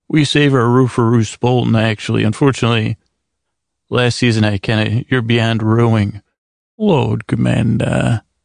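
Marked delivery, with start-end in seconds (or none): 6.7-8.1 acted lordly voice. Answering a question put to Stannis: Stannis impression.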